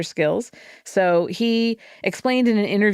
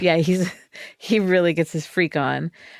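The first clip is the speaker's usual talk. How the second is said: usual speaking voice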